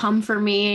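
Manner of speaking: ordinary delivery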